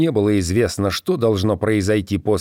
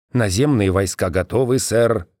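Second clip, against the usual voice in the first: ordinary delivery, nothing marked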